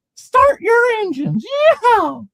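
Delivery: high, loud, slow scream. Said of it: "He screamed".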